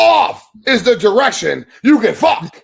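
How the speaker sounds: booming, drawn-out, slow, loud, high-pitched bellow. Quoting a colleague's line in the voice of Dwayne. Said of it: "in my best Dwayne voice".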